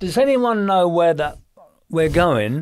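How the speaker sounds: put-on Cockney accent. Retelling speaking to firemen and construction men gathered in a van: cockney accent. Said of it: "in my Cockney accent".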